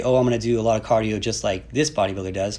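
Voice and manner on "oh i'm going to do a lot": ordinary delivery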